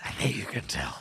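breathy, whispered comic-book villain voice. Mimicking the other speaker's line: imitating a Batman villain voice. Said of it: "it sounded like a Batman villain".

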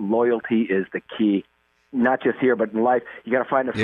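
normal talking voice

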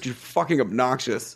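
ordinary talk, nothing marked

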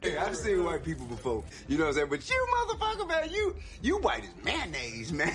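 animated comic voice, wide swooping pitch, played up. Doing a bit for the others: Dave Chappelle impression.

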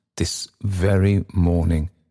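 ordinary delivery, nothing marked

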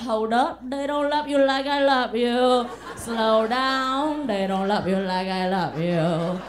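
loud put-on Vietnamese accent. Doing a bit about their mom for an audience, the speaker uses a vietnamese accent. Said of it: "That's a Vietnamese accent".

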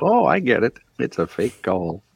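slow put-on voice. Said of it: "Real slow".

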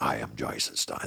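raspy, whispered voice under the breath. Attempting a Jason Statham impression with a raspy voice. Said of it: "get into a little Jason, Jason Statham".

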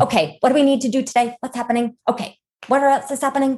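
rapid-fire, sharp executive delivery. Imagining being an executive on a call: quick-tongued, sharp-witted delivery. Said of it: "quick tongue, sharp-witted".

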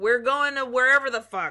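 put-on hype-man crier voice, yelling. Describing the bus partner who calls out destinations: imitating a bus crier yelling. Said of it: "he's the one that yells".

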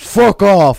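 put-on man's voice, very loud. Showing how to scare off someone at the truck door: put-on man's voice. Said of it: "Will you do a man's voice or something?".

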